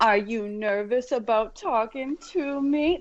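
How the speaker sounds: put-on drawn-out, slow, lively, animated talk as to a toddler. Imitating a man on a recording who talks like he's addressing a toddler: imitating someone speaking to a toddler. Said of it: "he sounds like he's speaking to a toddler".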